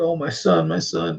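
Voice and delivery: high, drawn-out, acted sobbing and wailing. Retelling a father holding his injured son, imitating someone bawling. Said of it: "just bawling".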